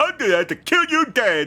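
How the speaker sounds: very high, dopey, dim-witted voice, played dumb. Show what the voice you just heard sounded like, in an Arin Hanson idiot voice. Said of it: "doing one of his like idiot voices".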